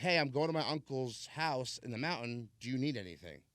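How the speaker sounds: plain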